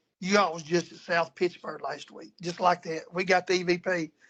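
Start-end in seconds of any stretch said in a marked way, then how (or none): 0.2-2.3 low, deep, grumbling, growly, grumpy voice. Retelling what a voice said on an EVP recording, imitating a deep, growly, grumpy voice. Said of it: "it goes real deep, growly, grumpy voice".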